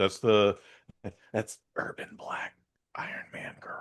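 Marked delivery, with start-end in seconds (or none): 1.3-3.8 very quiet, hushed whisper. Describing a TV show's lead character to another speaker: whispering. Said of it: "I have to whisper that whole thing".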